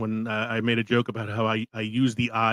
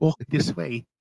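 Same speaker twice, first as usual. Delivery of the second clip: higher-pitched New Zealand accent; 5 semitones higher than usual. Suggesting how Igor could sound: Igor in a New Zealand accent. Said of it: "with the New Zealand accent".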